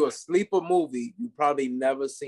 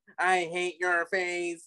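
mock robot voice, much slower; 4 semitones higher than usual. Retelling a scene from a film, imitating a robot voice. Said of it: "he's like playing like a robot".

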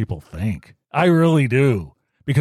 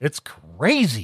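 ordinary talk, nothing marked

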